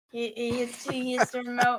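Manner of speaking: plain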